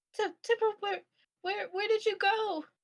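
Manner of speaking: light feminine voice. Voicing Lila calling to Temporal from the clouds: light feminine voice of Lila. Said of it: "You hear a very light and feminine voice of, um, of Lila".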